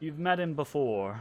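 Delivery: dry, flat, expressionless deadpan delivery. Voicing Fala answering the group's question, the speaker plays Fala, deadpan. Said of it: "looks at you kind of like deadpan and says".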